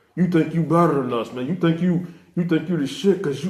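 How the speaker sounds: acted-out jeering, teasing, laughing mockery. Retelling guys taking turns laughing at the speaker: imitating laughing mockery. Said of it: "took turns laughing at me like".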